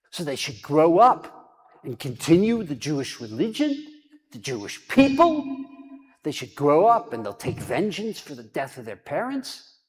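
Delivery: very loud, bellowed, raging yell. Speaker retells a biography where one man yells at another, retelling a yell. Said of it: "he starts yelling at him".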